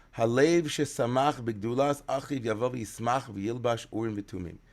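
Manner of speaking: ordinary talk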